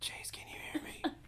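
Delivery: hushed, soft whisper close to the mic. Telling a story, the speaker retells whispering into a microphone: retelling a whisper. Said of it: "I whispered into my microphone".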